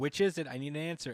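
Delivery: ordinary talk, nothing marked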